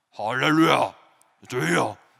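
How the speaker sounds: fake pious, rough, solemn churchy voice. Showing how one could fake sounding holy: put-on solemn holy voice. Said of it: "제가 목소리를 이렇게 하고 있지만 … 거룩해 보이지 않습니까?".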